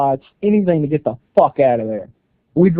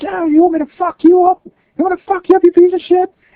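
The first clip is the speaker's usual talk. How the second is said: shrill, very high screeching scream; 4 dB louder than usual. Retelling running up to a passenger side window: retelling a scream. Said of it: "I start screaming at him".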